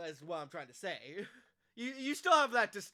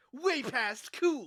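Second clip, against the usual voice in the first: cartoon hedgehog character voice; 4 semitones higher, 4 dB louder than usual. Talking to Cody about how Sonic talks, doing a Sonic impression. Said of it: "can you tell I'm doing a Sonic impression".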